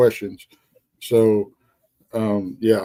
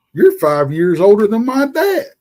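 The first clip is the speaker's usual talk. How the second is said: play-acted, high, loud holler; 8 semitones higher, 5 dB louder than usual. Retelling what a shift partner called back down the hallway, imitating someone hollering. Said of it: "he hollers back down the hallway".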